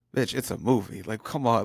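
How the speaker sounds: put-on exasperated, eye-rolling tone. Retelling own reaction at a movie, imitating own exasperated eye-roll. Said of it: "sitting there rolling my eyes going like".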